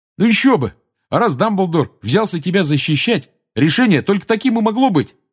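glad, happy, very high-pitched tone. Reading a character heaping mashed potato onto everyone's plates, in a happy voice. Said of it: "счастливым голосом сказал Рон".

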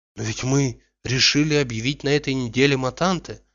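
ordinary delivery

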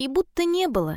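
ordinary delivery, nothing marked

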